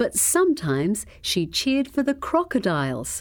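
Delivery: ordinary delivery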